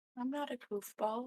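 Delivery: sad and sincere. A player answers the host calling the group goofballs, sad and sincere. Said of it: "you sounded so sad and so sincere when you said that".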